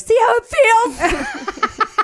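high, slow, laughing, mocking taunt.

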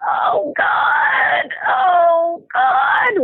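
very slow, high, strained, pinched, tight moan. Describing a mother rocking through contractions, imitating high, tight moaning. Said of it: "in this really high, tight voice".

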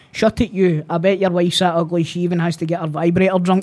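usual speaking voice

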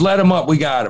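ordinary delivery

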